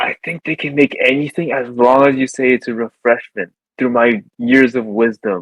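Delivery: stage whisper, loud. Speaking in character to a companion during a game: loud stage whisper. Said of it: "like a gesture of whispering and say".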